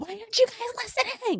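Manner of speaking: high-pitched screeching. Retelling calling family to dinner: imitating own past screeching. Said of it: "and I'm, like, screeching".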